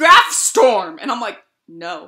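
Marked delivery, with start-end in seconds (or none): 0.0-1.0 confident, emphatic mispronunciation with total conviction. Retelling how a man said her name wrong, imitating his confident mispronunciation. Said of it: "he said it with such conviction".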